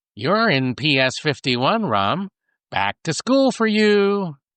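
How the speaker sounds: chirpy, happy, high-pitched little robot voice. Narrator reads a robotic voice addressing a man on a gurney, happy little robotic voice. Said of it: "chirps a happy little robotic voice".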